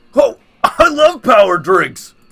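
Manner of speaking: loud, slow, drawn-out swooping character voice. Voicing Scott reacting to the wolf pack's drink: Scott character voice. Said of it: "I'll be Scott".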